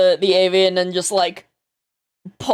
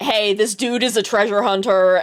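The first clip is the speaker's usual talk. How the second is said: usual speaking voice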